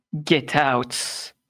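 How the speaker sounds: dragon voice like crackling fire. Narrating a scene to players, the speaker voices the dragon in a crackling fiery dragon voice. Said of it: "the voice of the dragon that's like fire crackling".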